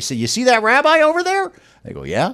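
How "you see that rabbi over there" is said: put-on, very high-pitched shout carrying across a distance. Retelling calling out to a family across a waiting area: retelling a shout. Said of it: "I shouted it out across the hall".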